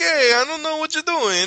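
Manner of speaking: high, loud, shrill fake Italian accent. Retelling what a man said as his accent kept drifting: fake italian accent. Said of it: "it started sounding Italian".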